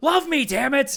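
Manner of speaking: mock enraged shout, loud and high-pitched. Describing a game where a character gets mad when charm fails, mock-angry demand. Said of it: "gets really fucking mad".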